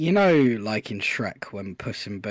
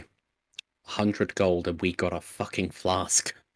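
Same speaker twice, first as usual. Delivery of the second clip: low, muttered, under-the-breath delivery; 2 semitones lower than usual. Walking down the stairs in the game, muttered under breath. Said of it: "just under my breath say".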